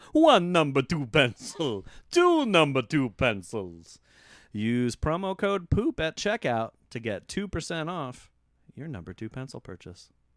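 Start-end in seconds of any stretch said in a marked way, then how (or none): 0.2-4.0 booming, loud, swooping sing-song vampire puppet voice. Counting pencils during a comedy ad read, in the Count voice. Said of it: "I sound like the count".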